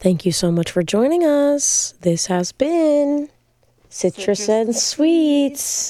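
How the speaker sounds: creepy high voice. Host signing off the show, thanking listeners: creepy-sounding voice. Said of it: "That sounded really creepy".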